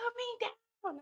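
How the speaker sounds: very high, piercing, shrill screaming. Retelling carrying her in the parking lot, imitating her screaming. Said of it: "she's like screaming".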